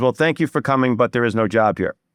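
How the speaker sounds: plain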